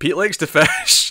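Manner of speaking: mock easy, offhand reply. Retelling own reply to a woman's complaint, retelling a smiling remark. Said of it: "I just sort of smiled and went".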